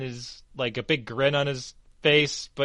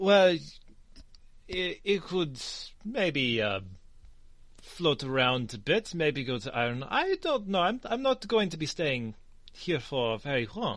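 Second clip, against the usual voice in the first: attempted put-on French accent; 5 dB quieter than usual. In a tabletop game, a player answers in character about moving on, attempted French accent. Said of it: "I am trying to get a bit of a French accent".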